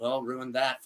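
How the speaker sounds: put-on muttering under breath. Retelling what someone said while walking past: imitating muttering under breath. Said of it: "he said under his breath".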